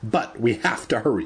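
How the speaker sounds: ordinary delivery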